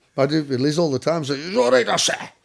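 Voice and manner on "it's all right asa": Cumbrian dialect twang, higher and louder. Showing how locals say the greeting: local dialect inflection. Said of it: "you gotta talk like that".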